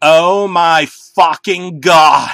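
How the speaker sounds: wild, erratic shriek, very loud, very slow, drawn out. Reading a story, the narrator reacts to a disturbing sight: screamed erratically. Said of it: "I screamed erratically".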